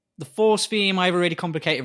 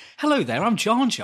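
put-on proper British accent, pitched slightly higher; 6 semitones higher than usual. Imagining Jar Jar with a completely different voice, the speaker does a proper British Jar Jar voice. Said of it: "proper, ... he's really British as well".

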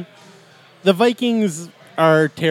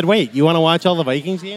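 ordinary delivery

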